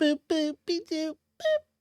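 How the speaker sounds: very high, drawn-out, squeaky singsong voice. Doing a Betty Boop voice after joking about her: Betty Boop voice. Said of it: "That's pretty good, actually".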